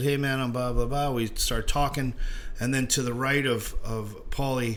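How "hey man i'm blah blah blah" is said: plain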